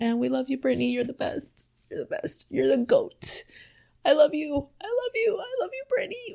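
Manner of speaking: high, tearful crying voice through the words. Signing off a video about a documentary, addressing its subject, crying. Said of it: "I'm sorry for crying".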